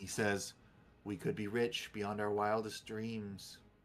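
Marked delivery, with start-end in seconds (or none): 1.0-3.6 completely flat, dead level monotone. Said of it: "with a completely flat tone".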